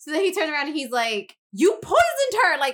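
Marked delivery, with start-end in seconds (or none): 1.5-2.6 loud, very high-pitched accusing shout. Retelling a character's accusation made loud so everybody can hear: imitating a loud public accusation. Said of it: "extra fucking loud so everybody can hear".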